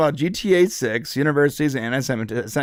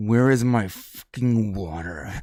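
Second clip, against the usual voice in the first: put-on angry actor voice, lower; 4 semitones lower than usual. Imitating Adam Driver as an actor demanding water: imitating Adam Driver angry. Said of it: "Why are you so angry all the time?".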